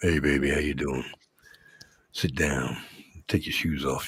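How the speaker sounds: put-on very deep, hushed voice. Because Linda asked for a deep voice, greeting someone in a put-on deep voice. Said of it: "Linda wants a deep voice".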